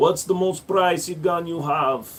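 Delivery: put-on Russian-accented voice. Speaker switching into a role while playing, in a russian accent. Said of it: "I'm going to use the Russian accent now".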